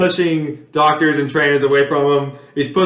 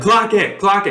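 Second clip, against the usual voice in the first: high, barked, put-on yelling; 5 semitones higher than usual. Retelling a play as the quarterback calls to spike the ball: imitating a yelling quarterback. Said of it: "Stafford is yelling".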